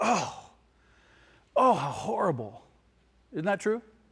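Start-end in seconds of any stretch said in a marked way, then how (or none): 0.0-2.6 gasping mock horror, pitched up. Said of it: "and you go".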